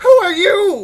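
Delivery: startled, shrill, very high, very loud yell. A game narrator voices a man woken by beard tugging, shouting at the player. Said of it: "Just shouts it at you".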